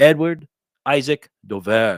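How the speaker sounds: loud put-on French accent on every word. Reading an article's byline aloud, in a put-on French accent. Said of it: "when I speak with this French accent".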